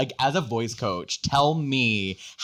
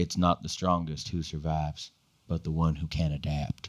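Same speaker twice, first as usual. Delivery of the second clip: very low, deep, soft and quiet rumble; 7 semitones lower, 6 dB quieter than usual. Practicing voiceover lines with a partner, taking the first one in a Joel voice. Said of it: "with my newfound Joel voice".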